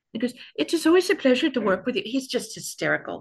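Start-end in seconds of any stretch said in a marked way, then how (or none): 0.6-2.1 put-on quick, raised Indian accent, words rattled off. Retelling a cameraman's goodbye after a hug, imitating Rushi's Indian accent. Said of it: "which is why I'm doing the accent".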